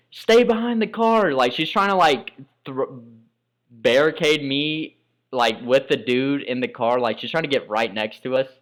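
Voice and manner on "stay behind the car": play-acted, very high, shrill screaming. Retelling a car fire, the speaker's mom screaming at them: imitating mom screaming. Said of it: "my mom is screaming at me".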